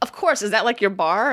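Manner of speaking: plain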